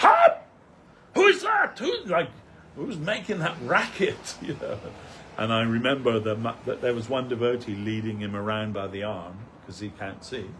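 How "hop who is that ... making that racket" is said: high, loud, angry shouting. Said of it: "he starts shouting".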